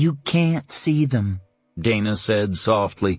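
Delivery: ordinary delivery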